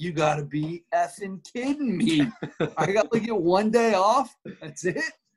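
disappointed, half-laughing tone. Retelling a player's reaction to a short break: imitating a disappointed Jamal Murray.

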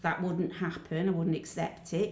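ordinary talk

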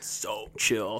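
put-on California dude voice. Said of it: "Don't start being a California guy".

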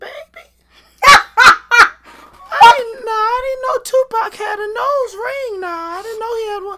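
very shrill, very loud, high voice. Retelling what Mom said while watching an interview: imitating Mom's voice. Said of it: "In that voice?".

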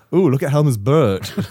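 campy Southern manner. Explaining how a place name in Amsterdam sounds when said aloud, camp Southern voice. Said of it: "in a camp sort of like southern sort of way".

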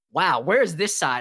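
ordinary talk, nothing marked

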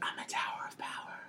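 very soft, proud whisper under the breath. Retelling a moment where Joe proudly says her line: imitating Joe whispering. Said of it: "Whispers it".

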